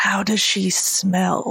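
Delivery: slow, secretive stage whisper. Whispering a question to a companion as a visitor leaves: whispering very quietly. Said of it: "I'm gonna whisper very quietly to Alisaie".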